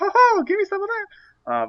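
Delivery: high cartoon mouse voice. Speaker imitates the men at a strip club, in a Mickey Mouse voice. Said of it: "That sounded like Mickey Mouse".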